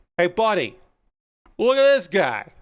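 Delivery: put-on thick, heavy New York street accent. Retelling what a passerby said on the street, in a very new york accent. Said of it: "with a very New York accent said".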